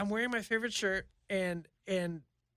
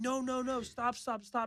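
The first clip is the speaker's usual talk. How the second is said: mock screaming, higher; 7 semitones higher, 7 dB quieter than usual. Telling a story about being chased, acting out the shouts they let out. Imitating someone screaming. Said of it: "Screaming like".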